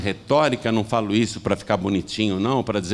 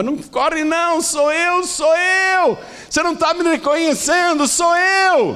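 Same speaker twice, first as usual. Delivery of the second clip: put-on shrill, very high shouting; 4 dB louder than usual. Retelling a story of a woman running after a man: imitating someone shouting. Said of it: "ela gritava".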